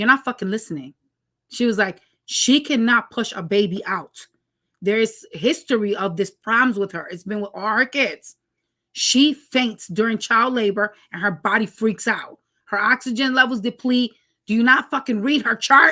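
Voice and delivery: plain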